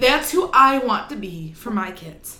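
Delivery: choked up, fighting off tears mid-sentence. Speaker talks about who they want to be for their kids, holding back tears. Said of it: "I'm trying not to cry".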